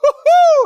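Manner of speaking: very high, loud, joyful whoop.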